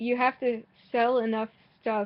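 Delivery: ordinary talk, nothing marked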